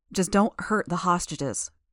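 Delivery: plain reading voice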